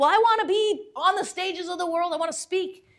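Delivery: very high, loud, worked-up, flustered outburst. Retelling answering a woman's question, reenacting a flustered blurt. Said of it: "she got me all worked up and flustered, and I just blurted it out".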